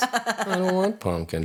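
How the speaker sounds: very high muttering under the breath. Quoting a coworker who talked to himself: imitating muttering to himself. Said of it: "just to himself".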